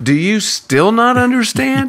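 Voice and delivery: heavily inflected, strongly rising and falling intonation. Retelling the last thing Jesus says in the account, with inflection. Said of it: "I love the inflection in your voice there".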